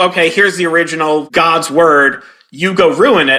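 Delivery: normal talking voice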